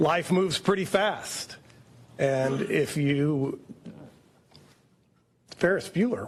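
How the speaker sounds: choked-up voice, catching and cracking. Speaker quotes Ferris Bueller after watching a video and hearing comments, choked up. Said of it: "Why am I getting choked?".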